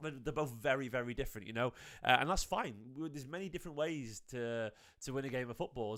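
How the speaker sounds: quiet, soft talk.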